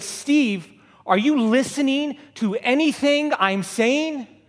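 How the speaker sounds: high, drawn-out screech. Speaker telling an audience what his wife said to him, imitating her screech. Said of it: "she screeched at me".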